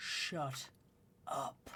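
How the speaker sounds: deep, inhuman-sounding voice. A game master voices something speaking in a player's head, deep inhuman voice. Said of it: "you hear this deep, un inhuman voice".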